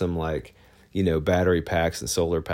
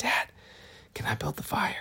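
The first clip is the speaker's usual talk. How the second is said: hushed, soft, breathy whisper; 10 semitones higher, 8 dB quieter than usual. Retelling how his daughter asked him a question, imitating a whisper.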